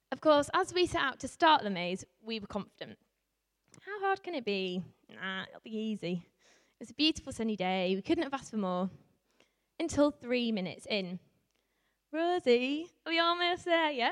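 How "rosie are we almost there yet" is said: put-on Yorkshire accent, pitched up. Retelling a line to Rosie three minutes into a maze, in an attempted Yorkshire accent. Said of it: "That's my attempt for Yorkshire accent".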